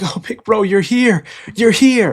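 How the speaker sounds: acted, high, tearful sobbing with relief. Retelling a comic scene, Brook seeing his big bro arrive: crying. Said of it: "Brook's crying, like".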